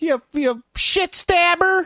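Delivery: very high, slow, squeaky mock voice.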